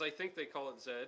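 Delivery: ordinary delivery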